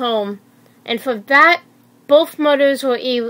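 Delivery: ordinary delivery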